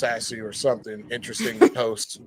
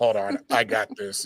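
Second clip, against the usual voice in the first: slow, calm, unemotional, unruffled stoic voice, acted; 3 semitones lower than usual. Retelling what Titan said, hearing him in his stoic voice: imitating Titan's stoic calm voice. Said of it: "I can hear him in his stoic voice".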